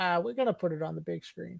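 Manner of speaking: very soft, quiet, rough-edged, creaky delivery. Discussing an early Star Wars-era film, speaker quotes George Lucas: George Lucas impression. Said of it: "That was a really good George impression".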